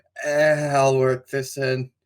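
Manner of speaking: limp, flaccid, effortless, halfhearted throwaway tone. Mocking a video maker working in an ad: imitating a flaccid, limp delivery. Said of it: "Just kind of flaccidly going".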